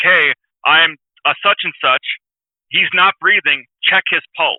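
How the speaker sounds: plain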